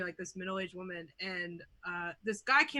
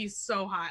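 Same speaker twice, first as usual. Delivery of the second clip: normal talking voice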